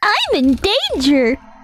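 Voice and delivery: put-on cartoon child voice. Joking before the final battle: Ralph Wiggum voice. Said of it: "That's Ralph Wiggum".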